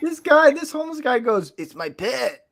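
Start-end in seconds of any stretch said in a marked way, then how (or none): 1.6-2.3 put-on Mexican accent. Quoting a homeless man in new york, in a mexican accent. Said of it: "I don't know why I'm doing Mexican accent".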